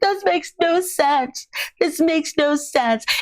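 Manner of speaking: mock very high, sobbing, bawling wail. Retelling how Rob reacted; imitating Rob bawling. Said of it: "He is bawling".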